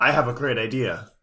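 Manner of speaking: put-on smug voice. Retelling how Kaiba claims the tournament idea: imitating Kaiba. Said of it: "And then Kaiba's like".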